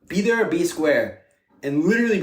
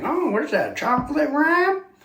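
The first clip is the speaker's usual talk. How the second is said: very high, squeaky put-on old man voice; 11 semitones higher than usual. Showing off the characters the speaker does on the pod, in an old man voice. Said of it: "like the old man".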